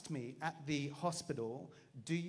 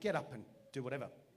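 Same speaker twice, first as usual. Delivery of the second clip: voice sounding annoyed. Retelling how Belinda answered while he felt faint: imitating annoyed Belinda. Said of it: "Belinda's just annoyed".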